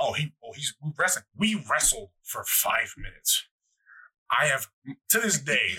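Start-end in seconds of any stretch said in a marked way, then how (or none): none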